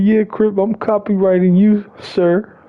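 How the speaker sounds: angry voice pitched way up high. Retelling what a friend said about a copyright strike: imitating a mad friend. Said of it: "He got all mad and like".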